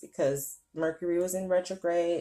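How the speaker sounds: usual speaking voice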